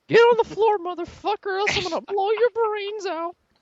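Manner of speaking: very high-pitched cartoon mouse voice. Asked on the spot to pull out the voice, doing a Mickey Mouse voice. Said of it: "pull out the Mickey Mouse voice".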